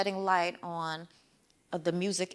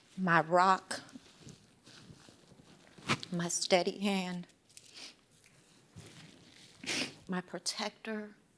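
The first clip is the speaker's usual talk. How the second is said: tearful, crying while speaking; 3 dB quieter than usual. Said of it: "I need a tissue".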